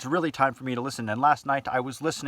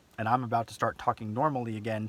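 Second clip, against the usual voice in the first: plain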